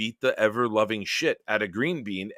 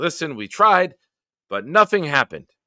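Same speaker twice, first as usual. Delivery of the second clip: put-on character voice with Yiddish-inflected accent; 6 semitones higher, 6 dB louder than usual.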